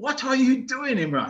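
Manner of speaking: very high, screaming yell. Retelling how the wicketkeeper reacted behind the stumps: imitating someone screaming. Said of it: "screaming at him".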